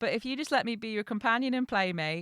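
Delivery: ordinary delivery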